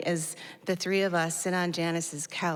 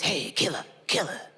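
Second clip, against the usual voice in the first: raspy, hoarse stage whisper, scraped out. Retelling a stranger's words on the street: imitating a very hoarse whisper. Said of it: "saying something with a very hoarse whisper".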